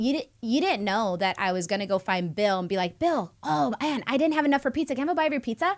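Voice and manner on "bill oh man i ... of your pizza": mock happy, pitched-up, high-energy friendly tone. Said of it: "with good energy and high energy".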